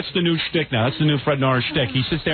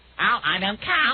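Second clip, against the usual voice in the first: taunting, mocking delivery, pitched up high; 7 semitones higher than usual. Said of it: "what is that new impression?".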